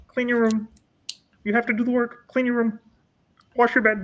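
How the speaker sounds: high, put-on lecturing voice. Trying to show how a man you find a little weird talks, in a Jordan Peterson voice. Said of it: "if I can try to do his voice, it's like this".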